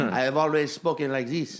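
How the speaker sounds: put-on fake French accent. Acting out a poker player who shows up speaking oddly: put-on French accent. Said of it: "Why are you speaking in a French accent?".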